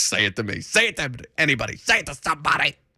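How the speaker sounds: shouting rant, running out of breath. Imitating a sports radio host shouting until out of breath: Mad Dog Russo impression. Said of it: "I don't want to turn into Mad Dog Russo where I'm just shouting things".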